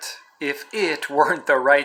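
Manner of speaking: ordinary delivery, nothing marked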